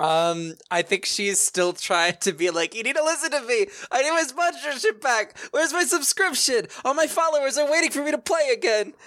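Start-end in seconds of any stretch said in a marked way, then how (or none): 2.7-8.8 very high, top-of-the-lungs, full-lung screaming. Playing an arrested influencer demanding her sponsorship back: screaming at the top of her lungs. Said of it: "screaming at her lungs".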